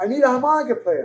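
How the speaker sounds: loud hollering, pitched high. Retelling how a man came out of the studio: imitating someone yelling. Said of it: "And he's yelling".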